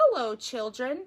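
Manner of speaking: sweetly spoken. Reading a story aloud, Miss Nelson greets the children, sweet voice. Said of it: "said someone in a sweet voice".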